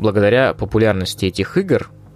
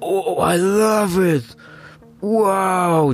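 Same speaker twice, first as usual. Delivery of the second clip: very high fake-excited gushing yell, "wow" stretched out; 11 semitones higher than usual. Mocking a blogger who yelled over every game update: imitating a blogger yelling. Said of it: "просто орала с каждого апдейта".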